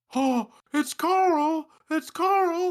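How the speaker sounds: very high, loud wrestling-announcer voice. Friends taking turns doing announcer impressions, a Josh Matthews impression. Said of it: "What about the Josh Matthews?".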